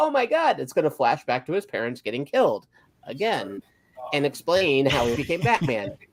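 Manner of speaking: usual speaking voice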